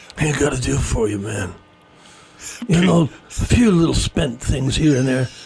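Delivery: gangster boss voice with a shady tone. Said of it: "do you use your mob boss voice again".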